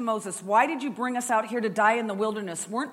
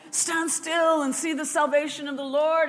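put-on grand prophetic tone, pitched high; 6 semitones higher than usual. Retelling Moses telling the people to stand still: mock prophetic voice. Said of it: "all prophetic-like".

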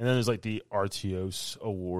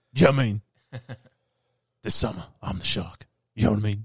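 gravelly put-on voice, louder; 7 dB louder than usual. Showing how to do a Jason Statham impression: Jason Statham impression. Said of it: "Jason Statham impressions".

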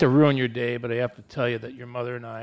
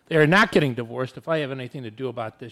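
ordinary delivery

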